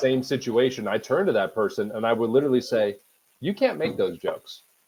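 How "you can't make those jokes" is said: put-on condescending tone, higher and quieter. Retelling what one would say to someone joking: imitating own condescending tone. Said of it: "I'll be as condescending as possible".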